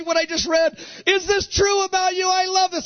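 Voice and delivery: rapt, high, near-shouted outburst.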